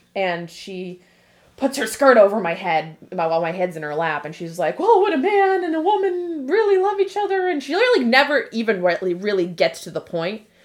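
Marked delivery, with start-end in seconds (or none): 4.8-7.5 very high-pitched, stumbling, flustered voice. Retelling how her mom dodged her teenage question, imitating her flustered mom. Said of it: "She just kind of gets flustered".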